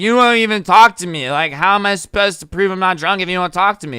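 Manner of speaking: put-on, loud, irritated, fed-up complaining. Retelling a drunk woman's complaint to a man: imitating an annoyed woman. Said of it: "She started getting annoyed".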